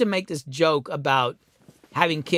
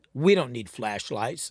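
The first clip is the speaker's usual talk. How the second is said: mock tone dripping with disgust; 4 semitones lower, 4 dB quieter than usual. Retelling how the kids answered an offer of flashlights: imitating a disgusted reply. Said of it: "looked at me in disgust and were like".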